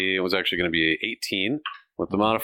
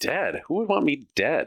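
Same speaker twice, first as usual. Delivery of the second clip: startled, taken aback, caught off guard, pitched up; 6 semitones higher than usual. A character, just told somebody wants her dead, reacts taken aback. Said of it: "She's pretty taken aback by that".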